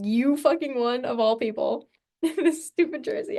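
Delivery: furious, angry, pissed-off ranting outburst. Retelling how their brother reacted to the free jersey, mimicking his angry rant. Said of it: "my brother was so pissed".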